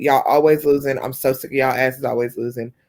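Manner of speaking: plain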